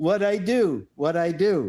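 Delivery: very slow, stretched, high, drawn-out woman's voice. Retelling body cam videos of sovereign citizen women: imitating a sovereign citizen woman. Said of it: "five, ten minutes of".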